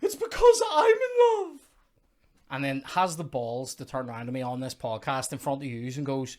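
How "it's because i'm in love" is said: shrill, booming, very high, loud shout. Retelling how Chloe reacted while watching the film: imitating Chloe shouting.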